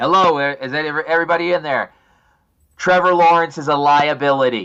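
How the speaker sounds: loud, slow, shouted voice. Calling out to all the people in northern Florida, shouting really loud. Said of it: "really loud so that all the people".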